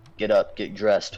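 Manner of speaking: mock sleepy, groggy, worn-out, tired voice. Retelling what she said each morning on coming in, imitating a groggy, tired voice. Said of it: "in the most groggy, tired voice ever".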